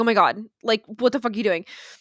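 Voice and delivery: put-on frantic, terrified, panicked scream. Retelling nannies screaming at children sledding downhill: imitating a terrified scream. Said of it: "They would scream in terror".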